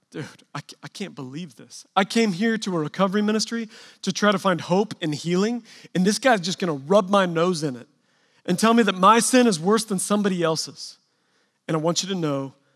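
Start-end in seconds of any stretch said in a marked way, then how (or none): none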